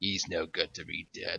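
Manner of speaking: low sleazy villain voice. Explaining why they liked Boba Fett back then, quoting him in a sleazy Boba Fett voice. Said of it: "he had kind of like the sleazy voice".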